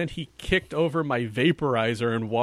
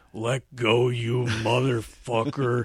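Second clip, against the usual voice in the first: put-on laconic drawl. Retelling the actor's slow final line: laconic Madsen impression. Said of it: "he's very laconic".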